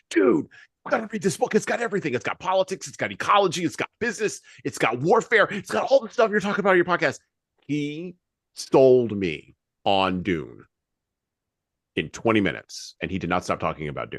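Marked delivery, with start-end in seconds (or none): 0.1-7.2 put-on, very high, gushing, animated excited pitch. Recounting how a man sold him on Dune, imitating his animated excitement. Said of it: "He got so animated".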